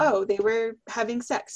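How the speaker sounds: ordinary delivery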